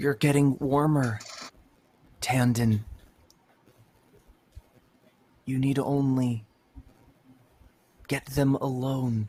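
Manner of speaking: hushed whisper, close to the ear. Voicing the old doctor whispering in a player's ear: whispering in the ear. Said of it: "The old doctor whispering in your ear".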